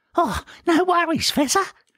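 shrill, very high whine. Narrator reading a character's reply after a fall, in a high-pitched whining voice. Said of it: "replied Horatio in a high-pitched, whining voice".

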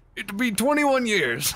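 shrill, booming, high pirate voice. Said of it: "you sounded like you're doing your pirate thing".

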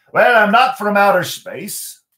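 put-on Irish accent. Narrating a story, voicing a leprechaun answering a boy's question, in an Irish accent. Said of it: "My Irish accent and my pirate accent kind of sound the same".

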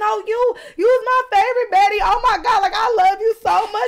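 mock, very high-pitched, crying, gushing voice. Retelling a fan who begged for a picture: imitating a crying fan. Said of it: "crying and everything".

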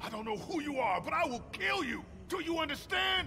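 furious, high-pitched, loud screaming voice.

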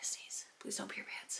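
anxious, very soft, unvoiced whisper under the breath.

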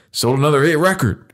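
put-on Southern accent. Acting out a man who turns his head, in a put-on southern accent. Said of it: "he does this weird, like, if he's trying to do a Southern accent, Texan".

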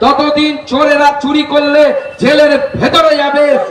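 ordinary delivery

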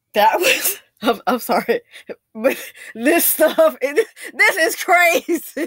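talking through helpless laughter. Reacting to a clip of someone stuck abroad, laughing while talking. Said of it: "I don't mean to laugh, but I can't help".

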